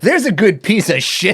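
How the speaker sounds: mock thrilled excited cry, very high, loud. Quoting a movie moment where the character finds something: imitating an excited Adam Sandler. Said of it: "he's all excited".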